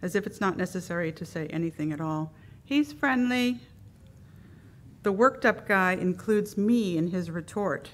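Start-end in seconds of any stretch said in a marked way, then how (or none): 2.6-3.6 overly casual, offhand, higher pitch. Reading the boxer's owner calling out across the field, way too casual. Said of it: "he calls out way too casually".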